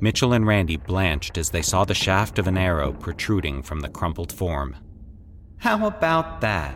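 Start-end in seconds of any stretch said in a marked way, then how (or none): 5.6-6.8 high, sneering, jeering, mocking tone. Speaking to two companions who have just found a body, mocking. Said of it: "Patrick said mockingly".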